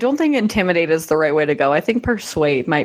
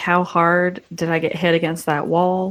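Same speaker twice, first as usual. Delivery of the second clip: normal talking voice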